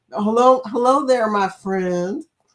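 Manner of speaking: put-on friendly twang. Retelling a friend's greeting, the speaker attempts Antoinette's friendly twang. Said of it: "She got that friendly twang going".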